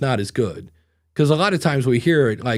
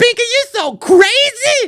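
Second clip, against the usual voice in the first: very high-pitched put-on woman's voice; 8 dB louder than usual. Describing a type of woman's reaction, imitating her in a high-pitched put-on woman's voice. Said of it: "to talk way up here".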